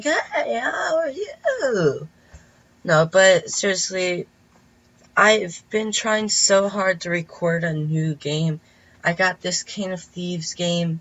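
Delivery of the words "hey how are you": failing hoarse, high, very slow voice. Redoing own greeting that sounded like losing a voice: imitating a voice that is going. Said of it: "I just sounded like I was losing my voice".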